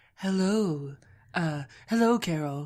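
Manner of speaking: deep, slow radio delivery. Imitating a radio host greeting a caller: Delilah impression. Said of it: "She's like".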